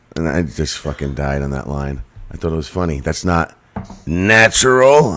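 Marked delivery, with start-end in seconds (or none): 3.0-5.1 attempted gritty character delivery. Quoting a favorite movie line, attempting Kel voice. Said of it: "why can't I have enough grit in my voice to do that voice".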